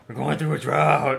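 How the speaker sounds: loud, creaky mock growling voice.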